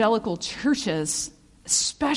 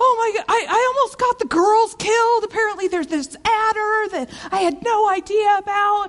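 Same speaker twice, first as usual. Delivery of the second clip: mock very high, frantic, panicked alarm; 10 semitones higher, 4 dB louder than usual. Retelling a husband's words after a near miss: imitating a panicking husband. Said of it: "my husband is panicking".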